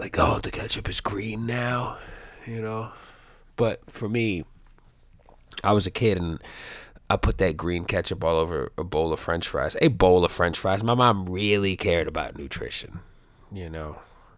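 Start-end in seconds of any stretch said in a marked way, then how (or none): 0.2-2.0 giddy, excited, marvelling stoner voice. Imitating heavy stoners who get excited about green ketchup: imitating an excited stoner. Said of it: "heavy stoners get real excited".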